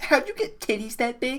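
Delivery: bashful, timid, shy very high voice. Playing a shy character asking her a question, in a shy voice. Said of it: "In a shy voice".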